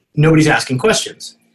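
usual speaking voice

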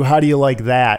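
ordinary delivery

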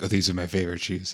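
quick, fast, muttered aside under the breath. Retelling a man stumbling and pulling his shoes off while running away, imitating mumbling under breath. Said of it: "he mumbles under his breath".

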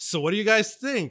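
very casual breezy voice. Retelling what a man said as he came out to the audience, mock-casual. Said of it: "And he just very casually said".

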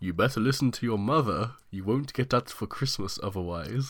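commanding, grand, lordly mighty voice. Retelling a childhood scene, the speaker quotes a man dressed as Santa in a lordly, mighty voice. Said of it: "this lord and mighty voice".

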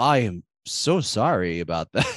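mock flat, emotionless delivery. Retelling a character's reply to sad news: imitating a flat, emotionless line. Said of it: "he doesn't even emote".

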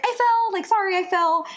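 acted offhand, breezy tone, pitched very high. Retelling what was said right after a fall: imitating a nonchalant tone. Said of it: "Just so nonchalantly".

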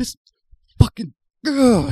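mock, very high, shrill, loud, furious outburst. Retelling a guest's reaction to spicy food: imitating Keegan-Michael Key angry. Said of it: "angry at it".

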